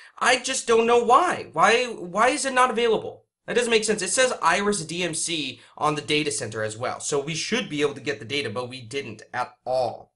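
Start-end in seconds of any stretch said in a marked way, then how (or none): 0.2-4.0 exasperated, baffled, frustrated, pitched up. Speaker unable to access data from a network, frustrated. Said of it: "I'm getting really frustrated".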